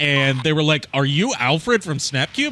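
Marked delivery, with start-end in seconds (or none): none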